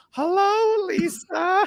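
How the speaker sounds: eerie, creepy, very high-pitched talking parrot voice. Retelling how a talking pet bird greeted the wife, in a creepy parrot voice. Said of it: "doing a creepy parrot voice".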